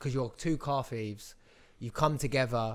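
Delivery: ordinary delivery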